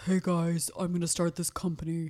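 put-on deepened voice. A speaker imitates a woman who started a blood company, imitating a deepened voice. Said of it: "she like deepened her voice".

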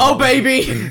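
very high, loud, intimate shout. Joking about being intimate with people by shouting: shouting intimately. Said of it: "that's what it would sound like".

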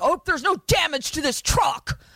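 put-on hostile deputy voice. Recapping a movie scene, imitating an aggressive deputy. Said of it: "super fucking aggro and is just like".

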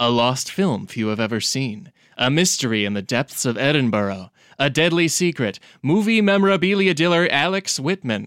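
epic, dramatic cinema trailer narration voiceover. Trying to sound like a good trailer guy, movie trailer voiceover voice. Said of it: "Do I do I sound like a good trailer guy?".

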